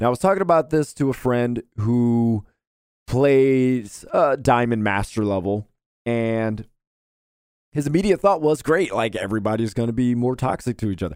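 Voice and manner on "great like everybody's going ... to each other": plain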